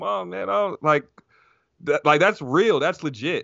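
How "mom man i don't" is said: put-on crying, higher pitched. Retelling a fighter FaceTiming his mom after an eye poke: imitating Leon Edwards crying. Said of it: "and he's crying like".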